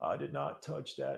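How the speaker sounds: slow, rough, drawn-out voice. Joking while testing a screen pen: Bill Clinton voice. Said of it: "I'm trying to do my Bill Clinton voice".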